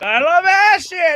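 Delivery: mock very high, unhinged scream. Retelling a movie scene where a naked man runs in: imitating someone screaming. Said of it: "runs in naked, screaming".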